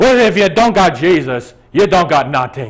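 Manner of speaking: put-on very loud, thick, heavy Swedish accent. Retelling a visit to an old woman in a retirement home; heavy Swedish accent. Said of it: "Swedish. Heavy accent".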